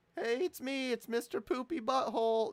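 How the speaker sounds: very high, squeaky, bad cartoon voice. Trying out a cartoon voice after saying it cannot be done: Mister Poopy Butthole voice. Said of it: "I can't do a Mister Poopy Butthole voice".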